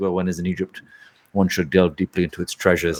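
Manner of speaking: low, flat deadpan, dead straight, no wink. Retelling a scene to another speaker, imitating Roger Moore's deadpan delivery. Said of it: "he says it so deadpan".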